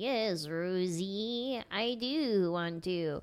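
drawn-out, very slow put-on little insect voice. Retelling how one person answers another for a dead bee, doing its voice. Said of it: "Mitchell does the voice of the bee".

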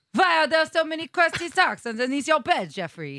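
put-on Russian accent, vampire style, high pitch. Asked to do a vampire voice, the speaker improvises a line, Russian vampire accent.

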